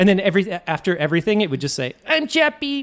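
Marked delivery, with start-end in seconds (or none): 2.1-2.8 grating, squeaky, annoying voice, pitched very high. Joking about a Chappie voice for Siri, answering about weather: Chappie voice. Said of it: "the most annoying, like, voice of all time".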